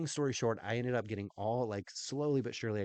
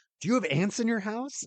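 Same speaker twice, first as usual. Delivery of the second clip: put-on flustered, breathless, panicked voice, higher and louder; 11 semitones higher, 7 dB louder than usual. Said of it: "he's flustered, and he's breathing heavy".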